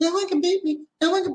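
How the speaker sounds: put-on very high, tiny little-boy voice. Imitating a big strong boxer who talked like a little boy: Mike Tyson voice. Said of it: "He talked like a little boy".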